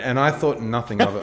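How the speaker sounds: ordinary delivery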